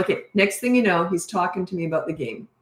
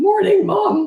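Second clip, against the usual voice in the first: very high-pitched, cracking, crackly adolescent voice; 13 semitones higher, 6 dB louder than usual. Retelling her teenage son's morning greeting: imitating a crackly teen voice. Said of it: "with a crackly voice".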